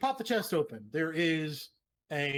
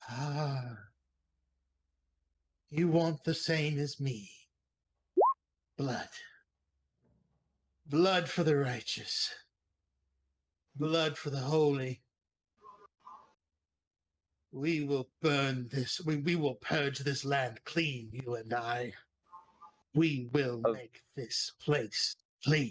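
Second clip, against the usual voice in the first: hushed whispering voice; 3 semitones lower than usual. Game master voicing a voice in the player's head, whispering voice in your head. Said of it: "A voice uh, whispers at the back of your head".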